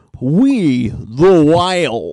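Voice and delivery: loud radio-announcer voice. Announcing a band's name the required way, radio-producer voice. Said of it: "you have to say it like that, like a radio producer".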